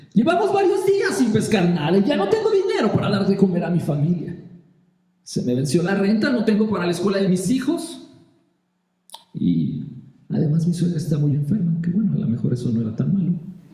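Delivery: high, rushed, ironic and annoyed tone.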